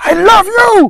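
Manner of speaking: hostile, very high, very loud, aggressive shrill bark. Showing how a cat reacts to tone alone: aggressive voice. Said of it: "say with an aggressive, uh, voice".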